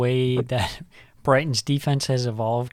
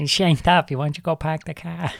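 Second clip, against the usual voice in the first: put-on, not-quite-convincing Boston accent; 4 semitones higher than usual. Co-hosts joking about accents, one trying a put-on Boston accent. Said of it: "I was going to say Boston accent".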